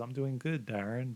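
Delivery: soft, gentle, tender, loving voice. Retelling a message heard deep down, in a retold soft, loving voice. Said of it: "this like really soft, loving voice that says".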